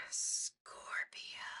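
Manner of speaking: breathy, hushed stage whisper. Going through horoscope readings with a co-host, whispering. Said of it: "Why are we whispering?".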